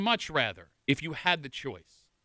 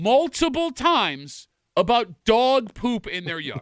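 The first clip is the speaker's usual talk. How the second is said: slow, deliberate, spelled-out delivery in a raised voice; 6 semitones higher, 5 dB louder than usual. Repeating a story to the group, speaking slower. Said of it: "I'm going to say that again a little bit slower".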